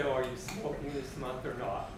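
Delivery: normal talking voice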